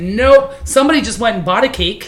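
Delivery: ordinary delivery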